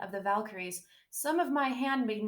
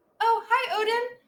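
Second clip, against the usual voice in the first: very high, loud, squeaky voice; 13 semitones higher, 8 dB louder than usual. Reading the story, Heimdall greets the narrator in a squeaky helium voice. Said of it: "Heimdall's helium squeaky voice".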